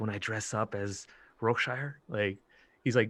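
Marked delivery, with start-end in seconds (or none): 0.0-2.0 whispered in a character voice. Voicing a character whispering into Otis's ear: whispering in character. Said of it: "whisper in his ear".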